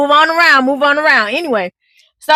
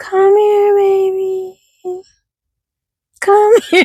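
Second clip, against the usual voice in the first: put-on high coaxing call, the word "baby" stretched; 6 semitones higher than usual. Retelling trying again to get a baby to come over, calling to a baby. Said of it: "I'm like".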